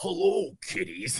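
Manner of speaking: put-on sinister, creepy slasher-villain voice. Recalling dressing up with a band, speaker does a Freddy Krueger voice. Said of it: "I always like talk like this".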